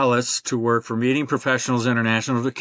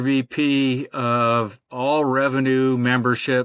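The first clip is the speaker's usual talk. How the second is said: ordinary talk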